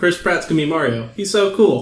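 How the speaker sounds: ordinary talk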